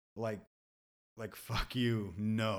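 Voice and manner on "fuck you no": put-on, strongly angry delivery. Showing how saying no can sound: acted angry no. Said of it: "an angry".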